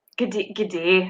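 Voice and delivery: attempted put-on Australian accent. Speaker tries an accent while chatting about australian accents, attempted australian accent.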